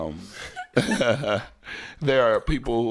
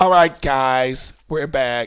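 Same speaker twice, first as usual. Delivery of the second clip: raised, pitched-up co-host voice; 5 semitones higher, 7 dB louder than usual. Opening the show again, imitating the other speaker. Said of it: "I was imitating you".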